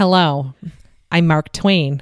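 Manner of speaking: put-on nasal central New York accent, slow, drawn out. Imitating a man who lived long in Elmira, nasal Mark Twain central New York accent. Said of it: "He had like a central New York accent, just like really nasal".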